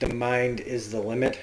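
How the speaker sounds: ordinary talk, nothing marked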